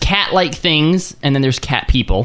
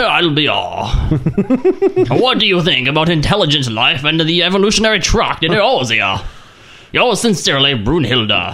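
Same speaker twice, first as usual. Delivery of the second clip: put-on gentleman voice, much slower. Two speakers imagine a creature writing a letter: real gentleman voice. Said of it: "he has like this real gentleman voice".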